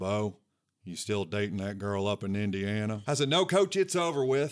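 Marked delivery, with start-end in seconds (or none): 0.0-3.0 mock dry deadpan delivery, flat pitch. Retelling a question his coach put to him, in Rich Brooks's dry deadpan voice. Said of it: "in that dead dry pan voice".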